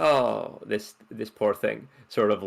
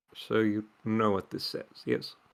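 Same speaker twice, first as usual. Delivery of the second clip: leaning-in, conspiratorial, lowered, hushed voice; 6 dB quieter than usual. Playing Archibald, the speaker leans in closer and lowers his voice. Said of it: "he just leans in closer and lowers his voice".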